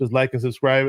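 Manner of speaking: ordinary talk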